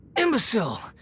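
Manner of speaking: contemptuous haughty tone. Sneering at an opponent after a fight: scornful arrogant tone. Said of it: "There's the tone of voice again".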